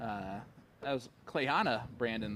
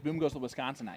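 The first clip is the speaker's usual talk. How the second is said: ordinary talk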